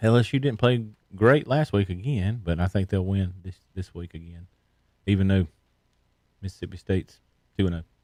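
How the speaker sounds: speaking softly into the mic. Giving a game pick on air: whispering into the mic. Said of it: "you gonna whisper into it some more".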